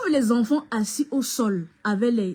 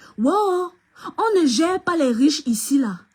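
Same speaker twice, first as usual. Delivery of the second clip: mock shout, pitched higher and drawn out; 5 semitones higher than usual. Retelling what a woman shouted down the corridor: imitating someone shouting. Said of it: "Elle commence à crier comme ça".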